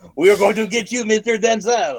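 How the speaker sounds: high, mock French villain accent. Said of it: "if the villains were French".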